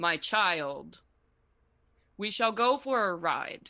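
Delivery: slow, unhurried spirit-horse voice. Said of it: "all of you hear this voice".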